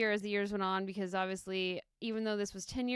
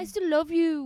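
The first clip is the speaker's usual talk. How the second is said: raised, high, laid-on, put-on London accent; 8 semitones higher, 10 dB louder than usual. Repeating a woman's line in her accent, put-on london accent. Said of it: "you sound like you're from London".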